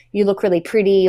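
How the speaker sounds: normal talking voice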